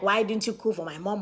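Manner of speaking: plain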